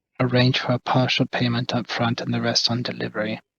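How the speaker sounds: very quiet, discreet, hushed confidential murmur. Quietly advising a companion on payment terms: speaking very quietly. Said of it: "I'll kind of very quietly say".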